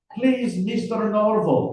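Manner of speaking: put-on thick, heavy Russian accent. Reading a thriller aloud, voicing an interrogator: thick russian accent. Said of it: "in thickly Russian accented English".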